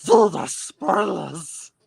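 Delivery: high, rough, squeezed-out creature voice. Trying to read a line aloud for the others, Gollum voice. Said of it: "I'll try and read it like uh, Gollum".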